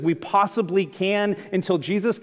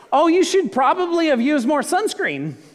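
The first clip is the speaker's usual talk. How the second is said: sing-song, pitched-up middle-aged woman voice; 8 semitones higher, 3 dB louder than usual.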